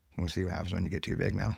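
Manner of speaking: normal talking voice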